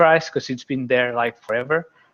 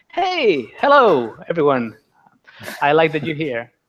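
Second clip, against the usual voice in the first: eager, extra-excited, swooping delivery; 4 semitones higher, 3 dB louder than usual. Restarting the call's greeting after a lousy start: with more excitement. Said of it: "try again with more excitement".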